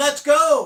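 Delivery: put-on Italian accent, called out very loud. After stretching, the speaker quotes the call to start the ride: Rosa's Italian accent. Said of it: "in her Italian accent".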